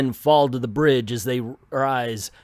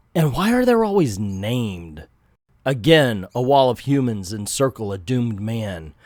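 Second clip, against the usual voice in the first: ordinary delivery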